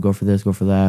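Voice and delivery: ordinary talk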